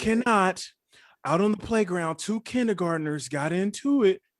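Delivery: grave, solemn announcement voice. Retelling an announcement to the kids about a playground fight, imitating a solemn voice. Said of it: "She would come on with a solemn voice".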